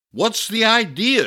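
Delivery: high-pitched, shouted outburst. A visitor shouts at the potter who smashed the vase on purpose: shouted. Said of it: "shouted the visitor".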